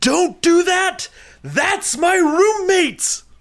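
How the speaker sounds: very high, shrill, drawn-out, top-of-the-lungs scream. Retelling waking to a girl throwing a shoe: imitating own scream. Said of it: "I scream at the top of my lungs".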